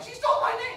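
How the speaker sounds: put-on very high, loud, outraged child voice.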